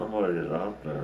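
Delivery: ordinary delivery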